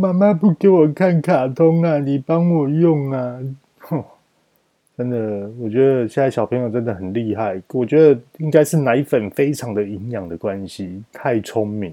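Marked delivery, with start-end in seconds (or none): 0.0-3.4 put-on high, tearful, crying little girl voice. Mother tells listeners her daughter just came up crying, imitating her daughter crying. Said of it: "她哭着说".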